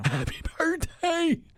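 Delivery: put-on elderly man's voice, very high. Saying happy birthday again after being asked: old man voice. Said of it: "you have to say it like an old man".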